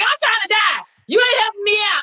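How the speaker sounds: put-on, high, fed-up, furious outburst. Retelling yelling at a car that swerved away: retelling own angry outburst. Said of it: "I was so mad".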